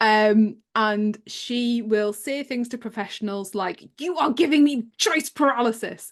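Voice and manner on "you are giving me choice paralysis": acted frustrated, angry voice, high pitched. A parent quoting their child's words to professionals, mock frustrated and angry. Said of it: "in a really, really frustrated and angry voice".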